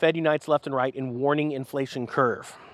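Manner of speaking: ordinary talk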